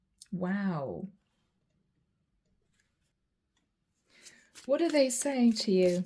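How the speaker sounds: speech breaking up with laughter, drawn-out "wow". Reading cards to viewers and apologizing for laughing, laughing while talking. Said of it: "Sorry, I'm laughing, guys".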